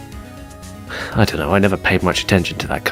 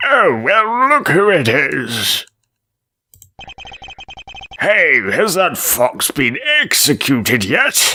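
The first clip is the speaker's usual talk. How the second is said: put-on strained old man voice, much higher and slower; 9 semitones higher, 3 dB louder than usual. Voicing an old man character at Bunny Burrow, slightly constipated old man voice. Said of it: "a sort of a slightly constipated old man voice".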